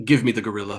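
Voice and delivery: voice with a faint, almost echoing quality. Running a game, the game master voices a psychic being stepping toward the players: almost echoing voice. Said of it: "in a voice that almost echoes".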